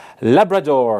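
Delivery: American-accented voice.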